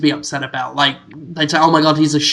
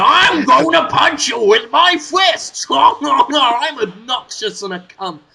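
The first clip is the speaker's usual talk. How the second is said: high, slow, drawn-out animated cartoon character voice; 9 semitones higher than usual. Acting out the Pac-Man from the animated cartoon: cartoon Pac-Man voice. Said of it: "that's what I want from my Pac-Man".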